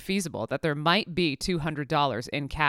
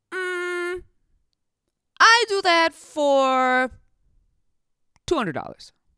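put-on Colombian accent, much higher pitch; 14 semitones higher than usual. Retelling Julia's answer when asked how much, Julia's Colombian accent. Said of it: "says in her Colombian accent".

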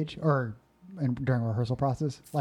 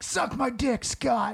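mock sudden outburst, very high, drawn-out yell; 10 semitones higher than usual. Retelling snapping at an actor who shushed during rehearsal: retelling a yell. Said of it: "and I just yell out".

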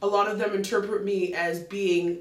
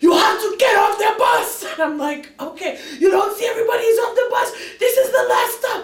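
loud, yelled, hollering delivery; 12 semitones higher, 8 dB louder than usual. Retelling a man on the bus ordering the speaker off at the last stop, imitating yelling. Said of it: "Are you going to continue yelling?".

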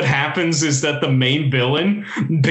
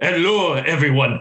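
put-on Spanish accent. Describing the Blue Falcon from Harvey Birdman, doing Blue Falcon's Spanish Calculon voice. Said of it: "give him this like really like Spanish calculon voice".

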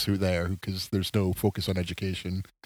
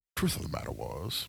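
bad put-on narrator voice, lower and quieter; 5 semitones lower, 12 dB quieter than usual. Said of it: "that was bad".

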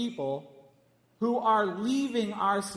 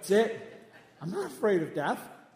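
usual speaking voice

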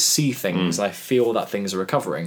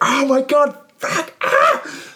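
mock very high, very slow, drawn-out agonized scream; 5 dB louder than usual. Telling of reaching the hospital still in serious pain, retelling screaming in pain. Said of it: "I'm still screaming. I'm like".

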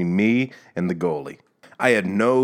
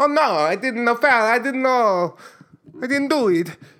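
very high-pitched put-on Italian accent. Speaker acts out a soccer player denying a foul, imitating an Italian accent. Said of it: "I apologize to all our Italian listeners".

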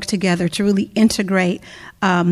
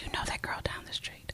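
fast, hushed, very quiet whisper. Speaking about church and community, the speaker demonstrates a whisper. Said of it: "talk in a whisper voice".

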